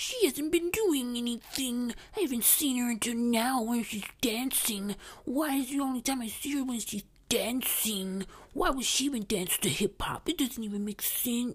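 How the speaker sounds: sneering mock male voice. Mocking complaints about Kamala Harris dancing to hip-hop: mocking put-on male voice. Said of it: "that last statement that I just made in the mocking male voice".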